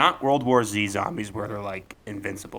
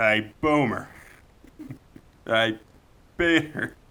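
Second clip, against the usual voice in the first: very slow, every word drawn out. Showing the only two lines they say as Joe: Joe voice. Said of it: "I love doing Joe".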